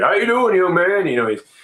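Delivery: booming hearty voice. Retelling the president greeting an old man in a wheelchair, in Obama's booming voice. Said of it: "he's got that booming voice".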